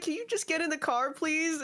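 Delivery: sweet, far-too-nice tone. Retelling how kidnappers asked someone to get in the car: imitating overly nice kidnappers. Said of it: "they would be really nice about it".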